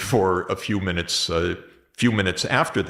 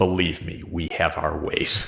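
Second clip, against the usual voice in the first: put-on grave tone, lower pitch; 3 semitones lower than usual. Retelling the president's reply to a reporter, imitating Biden speaking gravely. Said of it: "he says very gravely".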